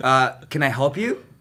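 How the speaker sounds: ordinary talk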